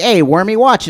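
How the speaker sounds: put-on 1930s gangster voice. Imagining a stranger who bumps into you and snaps at you, in a 1930s gangster accent. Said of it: "he had a 30s gangster's accent".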